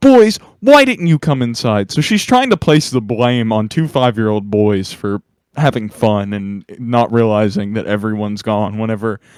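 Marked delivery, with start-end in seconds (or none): 0.0-1.9 high, swooping, scolding teacher-style yell. Retelling how a teacher ran outside at the boys: imitating a teacher screaming. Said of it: "she starts screaming at us".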